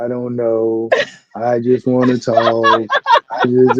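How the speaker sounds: very slow, low, flat, uninterested monotone drone. Imitating S J on the love-connection panel: S J's uninteresting voice. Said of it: "that uninteresting ass voice".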